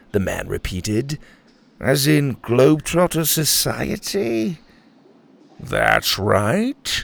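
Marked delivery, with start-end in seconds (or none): 5.5-7.0 suspicious, guarded, distrustful tone. Grandpa answers a mustached man's question, suspiciously. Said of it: "Grandpa answered suspiciously".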